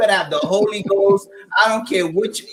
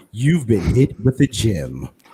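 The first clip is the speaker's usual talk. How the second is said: extra-deep, very low, sultry put-on seductive voice; 9 semitones lower than usual. Stopping mid-talk to deliver a catchphrase: put-on sexy voice. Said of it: "I gotta put my sexy voice on".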